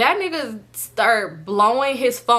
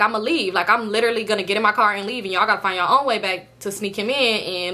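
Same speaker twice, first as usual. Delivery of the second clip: ordinary delivery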